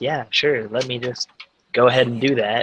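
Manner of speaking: put-on muttering in a grumpy, sulky kid-like voice. Voicing a character muttering after another brushes past him: childish mutter. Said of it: "childishly mutters".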